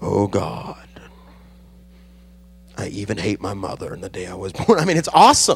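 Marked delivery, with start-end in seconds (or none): 0.0-4.8 low, gloomy, moping cartoon donkey voice. Showing how to read the Book of Job during morning devotion: Eeyore voice. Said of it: "shift into the Eeyore voice".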